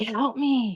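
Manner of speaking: mock creepy, eerie whispering. Recounting a voice heard while smoking outside, speaker retells a creepy whisper. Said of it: "somebody whispering like".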